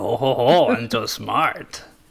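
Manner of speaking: very slow, deliberate character voice, every word stretched. Teasing the other speaker after their reply, in a Yoda-like voice. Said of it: "You sounded like Yoda just then".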